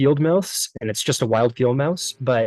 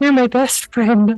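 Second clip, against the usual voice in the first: very high, loud, squeaky little mouse voice; 11 semitones higher, 5 dB louder than usual. After a player casts speak with animals, a little mouse answers: little mouse voice. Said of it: "the little mouse goes".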